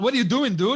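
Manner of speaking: thick exaggerated American accent. Friends discuss someone's accent; one jokes in a heavy American accent. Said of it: "he'd come back with the heaviest American accent".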